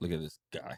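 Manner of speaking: acted, breathy whisper dripping with disgust. Acting out what people might say about a guy, mock-disgusted. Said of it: "I said it with disgust".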